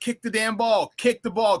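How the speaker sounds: mock-yelling. Recalling a football game, retelling a yell at the kicker. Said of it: "I kept yelling at him".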